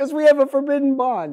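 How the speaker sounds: said through laughter. Explaining why he asked Jesse for a wholesome picture, laughing.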